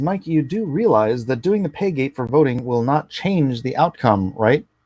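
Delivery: ordinary talk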